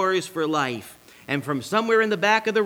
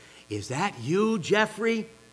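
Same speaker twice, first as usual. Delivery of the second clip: put-on seductive, sultry, sexy voice; 2 semitones higher, 4 dB quieter than usual. In a joke, a wife calls to her husband coming home at 3 a.m., put-on sexy voice. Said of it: "I called out in a sexy voice".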